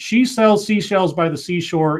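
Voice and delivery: ordinary talk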